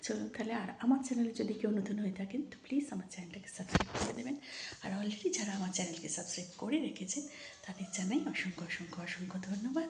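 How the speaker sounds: soft, hushed, quiet voice.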